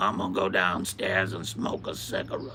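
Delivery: put-on broad, deep Southern American accent. Imitating a big fat guy who smoked a lot: Pimp Monk impression, Southern accent. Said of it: "talks with a deep Southern accent ... It sounded exactly like this".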